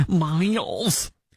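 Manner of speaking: put-on Michigan accent. Naming an owner hiding behind his keyboard, in a Haley Stevens Michigan accent. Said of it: "that's my Michigan accent".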